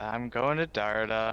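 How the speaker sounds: let-down, downcast, forlorn and disappointed tone. Volunteering to go next in the group's scene, disappointed. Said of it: "You sound so disappointed".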